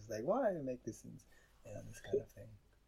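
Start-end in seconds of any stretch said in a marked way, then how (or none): 0.2-1.2 acted, cross, angry scolding mother voice. Retelling how a teacher mother scolded a crying child: imitating an angry mother. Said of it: "she was, like, angry at me".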